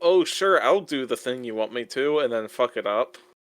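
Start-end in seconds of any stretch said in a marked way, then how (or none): none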